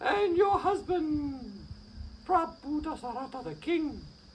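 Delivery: flustered, spluttering. Reading the maid's words as she bursts into the room, flustered, all of a splutter. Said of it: "her maid, Changi, burst into the room. All, all of a splutter".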